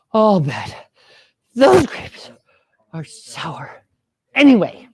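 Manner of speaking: halting, breathless, winded, hungry-sounding voice. Reading a fable aloud with children, voicing the fox that could not reach the grapes: hungry, out-of-breath fox. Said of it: "Fox, hungry, out of breath. That's the voice you use".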